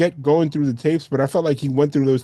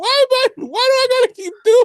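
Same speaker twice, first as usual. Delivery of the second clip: higher put-on crying voice; 4 dB louder than usual. Retelling an actor's reaction on set: imitating Jim Carrey crying.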